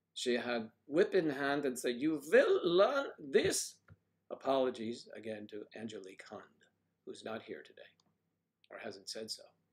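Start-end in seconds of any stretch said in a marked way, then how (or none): 2.0-3.8 put-on slow, very high, old-film style German accent. Retelling what a woman with a whip said: imitating Angela's German accent. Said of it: "my German accent, is comes from old movies".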